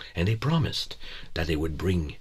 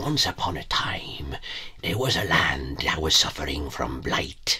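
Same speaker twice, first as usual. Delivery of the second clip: hushed, whispered storyteller voice; 2 semitones lower than usual. Showing one kind of storyteller opening a tale, in whispery storyteller voice. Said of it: "the kind of storyteller that's very whispery".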